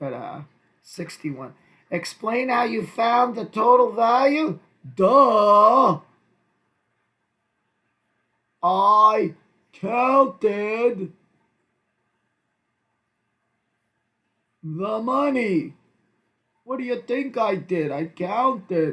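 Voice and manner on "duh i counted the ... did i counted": put-on sarcastic, snarky tone, louder. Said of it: "I would never talk like this to them".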